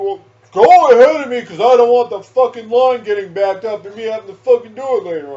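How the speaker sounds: put-on yell. Retelling what a coworker said at work: imitating a coworker yelling. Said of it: "And he fucking yells at me".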